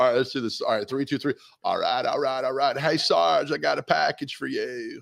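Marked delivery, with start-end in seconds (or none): 1.6-5.0 stuffy, congested voice with a rough creak. Reading a comic strip aloud as Beetle Bailey: stuffy Matthew McConaughey voice. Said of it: "I'll be Beetle Bailey as the voice of a very, uh, stuffy Matthew McConaughey".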